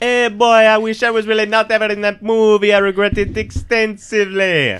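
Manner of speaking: put-on Jamaican accent, very high, very loud. Answering a call for someone to do a good Jamaican accent, Jamaican accent. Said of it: "Who can do a good Jamaican accent?".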